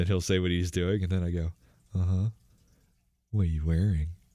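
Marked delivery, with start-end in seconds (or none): 1.9-4.1 imitated creepy tone. Retelling how they talk when answering a phone call: imitating a creepy voice. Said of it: "I get real creepy and I go".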